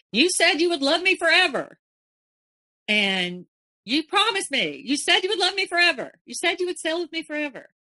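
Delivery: high, furious, out-of-control raging scream. Speaker recounts a man standing in a dinghy screaming at the speaker: retelling a scream. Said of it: "He stood up in the dinghy and he screamed".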